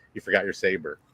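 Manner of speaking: low, passing mumble, almost unheard. Retelling a fellow passenger walking by at the terminal, muttered under breath. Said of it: "almost under his breath".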